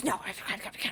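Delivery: rushed, fast, soft whisper. Retelling how he would answer: whispering. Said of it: "he'd like whisper".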